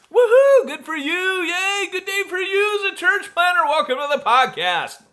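very high, fake, over-the-top whooping party cheer. Welcoming listeners to the podcast right after condolences: mock over-the-top party cheer.

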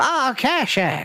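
put-on woman's voice. Storyteller voices Hattie as Kashak comes back waving; Hattie's voice. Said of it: "Trying to get this woman's voice right again".

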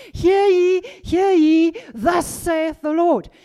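high, booming, pulpit-style voice at full volume. Retelling how a congregation member stood up to prophesy: imitating old Pentecostal prophesying. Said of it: "he stood up and he started prophesying".

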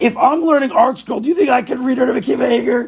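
put-on furious scream. Retelling a student's complaint about the notes: imitating someone screaming angrily. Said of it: "He's, like, screaming. He was so angry".

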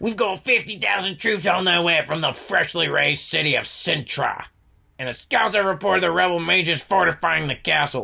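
voice with a rough, creaky edge. Retelling a game scene, the speaker mimics a character's troop report, Nilfgaardian voice impression. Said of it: "what does a Nilfgaardian sound like? This guy sounds like that".

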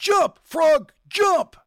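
loud, high-pitched yelling.

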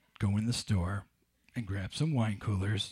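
low kidnapper-style voice. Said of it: "In my best Ransom Exchange voice".

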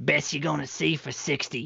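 husky, rough, creaky heavy smoker's voice. Retelling what a woman said to the speaker and friends, in a smoker's voice. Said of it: "kind of talks like this, you know, like she's been smoking".

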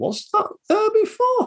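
squeaky, very high voice swooping around in pitch. Recommending a film, the speaker acts out a scene in a squeaky Julia Roberts impression. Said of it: "I don't know why I did the squeaky voice".

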